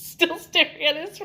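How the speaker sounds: talking through laughter. Retelling a story scene and breaking down: laughing while talking. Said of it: "The reason I'm laughing like this".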